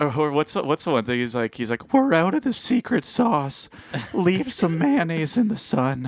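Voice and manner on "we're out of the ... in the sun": high, slow voice with swinging pitch. Reminding someone of a cartoon character who always talks like this, do the teenager from The Simpsons voice. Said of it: "his whole character is to talk like that".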